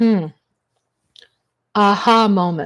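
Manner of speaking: plain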